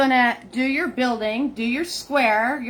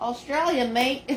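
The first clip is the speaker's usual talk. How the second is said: fake, put-on Australian accent; 3 dB quieter than usual. Greeting a viewer hailing from Australia: put-on Australian accent. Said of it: "That's my uh, Australian accent".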